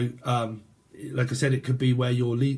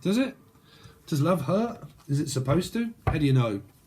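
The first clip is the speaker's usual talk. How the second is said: heavy, mocking sarcasm with swooping pitch; 4 semitones higher than usual. Questioning the listeners about love: very sarcastic. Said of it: "I'm being very sarcastic".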